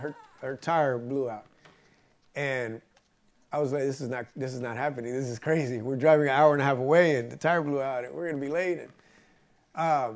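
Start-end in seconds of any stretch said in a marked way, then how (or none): none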